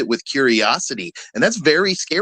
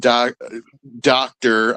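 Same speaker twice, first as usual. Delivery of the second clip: sarcastic scare-quote tone on the word "doctor". Naming a debate opponent's title: sarcastic air quotes on Doctor. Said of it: "I hope you can hear the air quotes in my voice".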